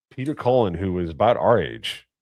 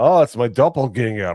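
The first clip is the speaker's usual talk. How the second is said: put-on Scottish accent; 5 semitones higher, 5 dB louder than usual. Retelling what the Drinker said on meeting at the meetup: Scottish accent imitating the Drinker. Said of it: "That Scottish accent".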